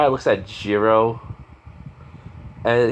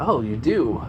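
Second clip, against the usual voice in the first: plain reading voice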